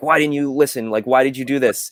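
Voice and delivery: put-on yelling voice. Recapping a Bad Batch scene after she returns from the farm, imitating Hunter yelling. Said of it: "Hunter's like yelling at her like".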